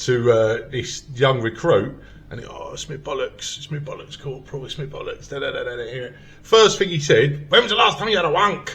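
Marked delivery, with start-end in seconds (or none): 7.5-8.8 loud, quick-fire put-on Scottish accent. Retelling what a corporal first asked the young recruits: Scottish accent. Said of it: "my best Scottish accent".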